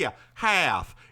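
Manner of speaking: put-on Southern accent. Retelling answering a man with a jersey accent, in a put-on southern accent. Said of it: "I put on the Southern".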